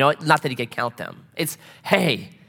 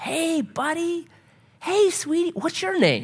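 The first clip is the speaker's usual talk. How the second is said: put-on soft, very high child-directed voice. Showing how adults greet a new little kid, voice raised an octave. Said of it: "raise their voice an octave or two".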